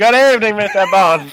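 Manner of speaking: put-on Jamaican accent. Doing a quick bit for the other speaker, in a put-on Jamaican accent. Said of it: "with a Jamaican accent?".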